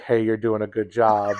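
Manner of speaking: mocking, sarcastic delivery. Retelling a phrase the speaker used to say: mocking tone.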